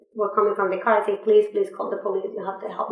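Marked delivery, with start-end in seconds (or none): 1.3-2.9 acted tearful crying voice, quieter. Recalling how she begged people from a car for help, retelling a crying plea. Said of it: "So I was crying".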